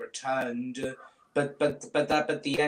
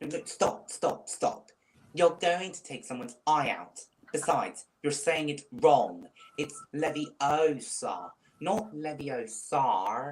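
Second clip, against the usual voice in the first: put-on know-it-all scolding character voice. Retelling the scene where they learn a spell, in Hermione voice. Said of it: "I'm really good at doing her voice impressions. Like ... like this".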